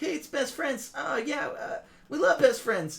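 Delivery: bad put-on voice, pushed very high. Retelling the ring announcement in a match: bad Morty impression. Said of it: "the worst Rick and Morty impression in the world".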